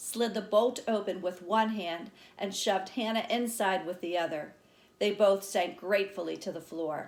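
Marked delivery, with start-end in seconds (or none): none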